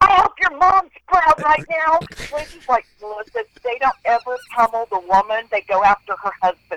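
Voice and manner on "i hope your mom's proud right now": high, angry, taunting mock screaming. Telling a story about being squirted with a squirt gun, retelling a scream. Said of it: "I'm screaming".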